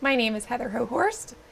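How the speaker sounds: cracking, breaking voice. Asked her name and what she does at Salters, she introduces herself, voice cracking. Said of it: "and my voice is cracking".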